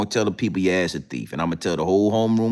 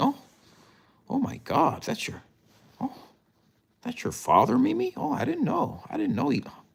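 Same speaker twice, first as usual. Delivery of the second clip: very high, swooping, smitten gushing; 5 dB quieter than usual. Acting out a teacher meeting Mimi's father in class: imitating a smitten teacher. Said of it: "your teacher gonna get smitten".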